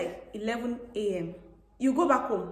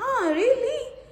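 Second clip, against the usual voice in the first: put-on high, slow Filipino-accented teasing tone. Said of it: "It's the accent she's trying to".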